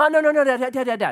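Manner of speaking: put-on high-pitched, begging, pleading three-year-old toddler voice. Father retells his three-year-old daughter stalling at bedtime, imitating a pleading toddler. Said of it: "She's three years old".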